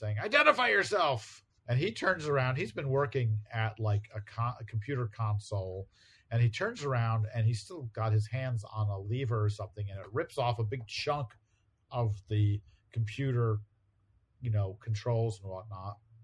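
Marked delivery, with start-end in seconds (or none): 0.2-1.4 high-pitched, loud yelling. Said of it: "starts yelling at Wonder Man".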